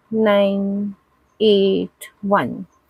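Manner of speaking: evenly spaced flat delivery. Demonstrating a digit-span trial for a participant, monotone evenly spaced digits. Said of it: "read out in monotone and in equal spacing".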